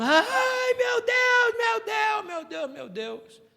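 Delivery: very high, drawn-out, wailing, howling scream. Retelling how a man fell to his knees: imitating a man screaming and howling. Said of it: "Ele gritava urrando".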